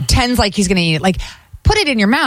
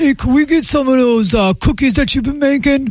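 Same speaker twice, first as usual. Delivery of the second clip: mock high, sloshed, drunk-sounding voice; 6 semitones higher than usual. Imitating drunk strangers showing up at two AM: imitating wasted 2 AM customers. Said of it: "Why do they gotta sound like that".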